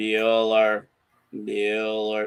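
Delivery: flat, dull, droning monotone teacher voice. Recalling a droning tour guide, the speaker mimics a teacher: flat droning monotone. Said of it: "Yeah, that tone".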